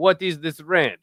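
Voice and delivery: terrible put-on Italian accent, slow and drawn out. Speaker imagining Italians reacting to a ranch request, retrying a put-on Italian accent. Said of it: "that's actually a terrible Italian accent".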